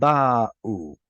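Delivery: ba'u, slow, stress on the first syllable. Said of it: "Hebrew word with penultimate stress".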